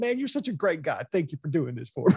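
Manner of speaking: really emotional, gushing delivery. Retelling a movie scene where a kidnapper thanks his victim: imitating Renee Auberjonois getting emotional. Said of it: "Renee Auberjonois gets really emotional, going".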